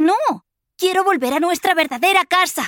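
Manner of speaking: shrill, very high-pitched shouting cry. Kizba answers her mother, shouting. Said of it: "Gritó".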